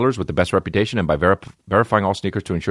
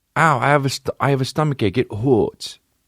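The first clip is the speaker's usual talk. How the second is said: put-on high, whimpering little baby-talk voice; 5 semitones higher than usual. Showing how he does baby voice with his girl: baby voice. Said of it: "That's fucking gangster to do baby voice with your girl".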